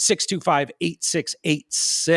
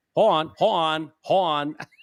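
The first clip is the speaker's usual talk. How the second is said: put-on young child's voice with mispronounced words. Retelling how a four-year-old said hold on: imitating a four-year-old's mispronunciation. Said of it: "'cause he couldn't say "hold on."".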